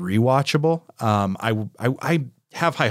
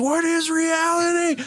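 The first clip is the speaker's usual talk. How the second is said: very high-pitched, unhinged, screaming shriek. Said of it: "one moment where she just screams".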